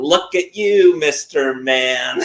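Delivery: woman's voice, slow and drawn out. Retelling what the cat show woman tells the wife: imitating the cat show woman. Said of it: "she'll be like".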